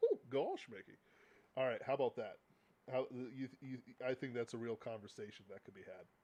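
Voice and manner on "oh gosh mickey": put-on goofy cartoon character voice. Acting out a Mickey and Goofy exchange, answering Mickey in a Goofy voice. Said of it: "That's more of a goofy voice".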